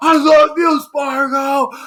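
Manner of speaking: very high, very loud, very slow drawn-out cheer. Retelling a guy cheering for spargo in the crowd: imitating someone yelling.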